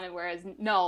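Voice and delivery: ordinary talk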